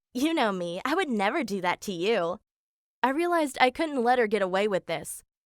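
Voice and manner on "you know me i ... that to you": ordinary talk, nothing marked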